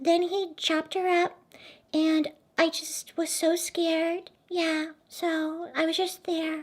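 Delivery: put-on over-innocent voice, very high and slow. Retelling how a suspect answered police questions: imitating an innocent voice. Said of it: "very innocent. She'd be like".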